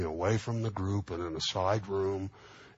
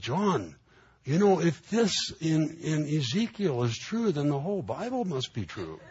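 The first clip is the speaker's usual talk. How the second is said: put-on comic regional English accent, pitched up, swooping; 8 semitones higher, 4 dB louder than usual. Retelling a conversation, the speaker quotes a man in a funny English accent. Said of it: "funny English accent they have from that part of the world".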